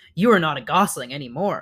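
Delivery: ordinary delivery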